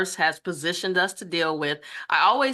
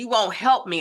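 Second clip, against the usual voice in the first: acted-out screaming; 4 semitones higher than usual. Speaker recalls a hard time, reenacting screaming at a husband, retelling a scream. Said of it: "I'm just literally screaming at my husband".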